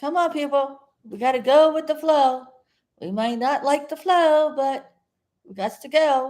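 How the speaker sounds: shouty, rousing, high-pitched yelling. Addressing the people watching from the porch, yelling. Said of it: "it sounds like I'm yelling because I am".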